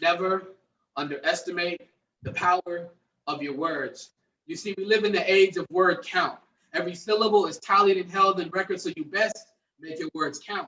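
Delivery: intense spoken word delivery.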